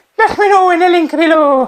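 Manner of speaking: very high-pitched Irish accent slipped in. A video host repeats his earlier slip from the recording, in an irish accent. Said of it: "I don't know why I sounded Irish and saying".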